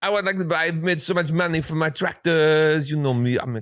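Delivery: put-on comedic Italian accent. Speaker retelling what a man said when he went up to buy, comedic Italian accent. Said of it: "I'll do the voice and the hands and everything because it's it's Italians".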